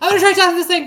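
quick, rushed, shrill, very loud high shout. Calling to a companion in a cavern, in character: quick yell. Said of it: "I'm gonna yell very quickly".

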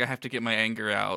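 plain

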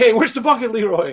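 mock scream-like shout, held back, mild and half-hearted. Retelling shouting back at voices the speaker heard, retelling own past scream. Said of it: "I started screaming at them".

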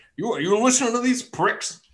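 put-on very high, grouchy old dwarf voice. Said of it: "groveling, grumpy old dwarf".

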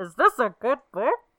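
very loud, big, bad booming voice. Repeating a quoted line with a laugh: Bane-ish voice. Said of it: "it sounded a little Bane-ish".

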